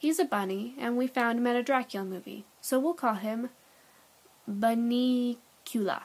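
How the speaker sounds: plain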